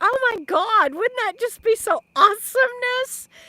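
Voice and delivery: loud excited yelling. Speaking to Pearl about her signed paperback of the new book, yelling. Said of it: "sorry if I'm yelling in the mic".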